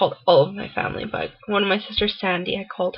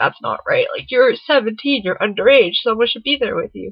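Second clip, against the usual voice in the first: heated, really angry, indignant voice; 2 semitones higher, 4 dB louder than usual. Retelling a sister's complaint that no one was there: imitating angry sister. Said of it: "really angry".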